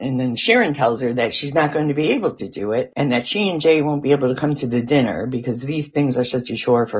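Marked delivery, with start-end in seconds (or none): none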